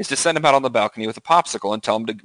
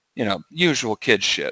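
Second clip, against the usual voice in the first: usual speaking voice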